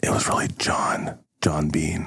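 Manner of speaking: secretive, breathy, hushed whisper. Acting out a conspiracy sketch, a character reveals a name, whispering. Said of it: "he whispers".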